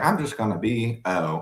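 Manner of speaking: normal talking voice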